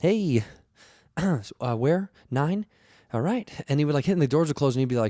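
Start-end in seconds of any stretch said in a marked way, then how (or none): 0.0-3.5 uncomfortable, hesitant, nervous, very slow delivery. Imitating a real, nervous elevator attendant at a friend's building. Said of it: "he looked so nervous".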